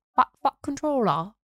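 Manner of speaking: put-on Liverpool accent. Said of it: "In a like a Liverpool accent".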